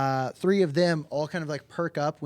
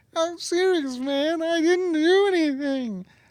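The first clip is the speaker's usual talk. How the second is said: very high, loud bawling, sobbing through the words; 5 dB louder than usual. Voicing a game character facing an intimidation roll, bawling while talking. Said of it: "and he's just bawling".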